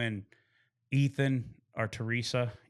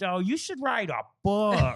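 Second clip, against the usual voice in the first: put-on pitched-up New York accent; 8 semitones higher, 3 dB louder than usual. Recalling what she told the speaker during a visit, in her new york accent. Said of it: "she's got this New York accent".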